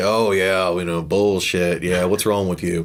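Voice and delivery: mock scoffing, mean skeptical tone. Describing a father who doubts everything: imitating a mean skeptic. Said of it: "he's like the mean ske-".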